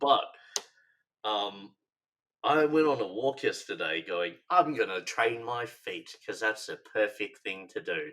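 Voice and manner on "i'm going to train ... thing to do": put-on, self-styled British accent. Retelling what they told themselves on yesterday's walk, put-on British accent. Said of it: "in that you know very good British accent of mine".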